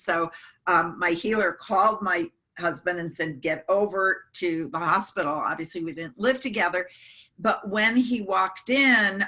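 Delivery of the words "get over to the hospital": normal talking voice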